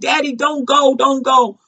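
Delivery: put-on childlike desperate pleading. Explaining a poem by acting out a child at a deathbed: imitating a little kid pleading. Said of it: "Like a little kid be like".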